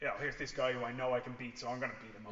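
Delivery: normal talking voice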